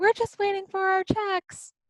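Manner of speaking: very high, far-carrying scream. Retelling how a woman on the patio answered your loud remark; imitating someone screaming across. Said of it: "screams out over".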